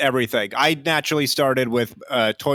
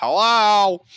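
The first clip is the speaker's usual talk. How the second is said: mom voice, pitched up; 8 semitones higher, 4 dB louder than usual. Describing a mom's habitual greeting, imitating a nineties mom. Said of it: "she always goes".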